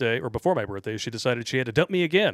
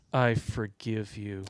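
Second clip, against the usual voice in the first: very condescending, patronizing, talking-down delivery; 3 semitones lower, 5 dB quieter than usual. Retelling her words while handing back the jacket: imitating a very condescending tone. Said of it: "she says in her very condescending tone".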